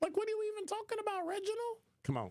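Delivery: changed voice quality. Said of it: "you see how I changed the timbre".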